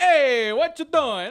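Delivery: very loud, very slow, bad New York accent. Imitating what people in New York say: attempted New York accent. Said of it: "I don't know how New York accent".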